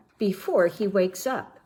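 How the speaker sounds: ordinary delivery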